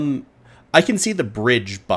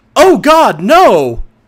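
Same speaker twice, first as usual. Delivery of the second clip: crying out, very high and very loud; 11 semitones higher, 12 dB louder than usual. Calling out in character as if someone is hurt: calling out. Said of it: "sort of call out".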